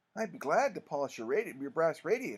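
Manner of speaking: ordinary delivery, nothing marked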